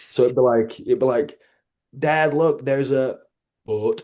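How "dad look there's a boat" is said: put-on northern English Yorkshire accent. Father imitates his daughter slipping back into Yorkshire: daughter's Yorkshire accent. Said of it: "she flips back into like Yorkshire".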